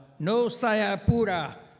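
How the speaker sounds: sarcastic shouted yell, high-pitched. Retelling someone hurrying slow people to the courts: imitating someone yelling. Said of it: "he would yell out".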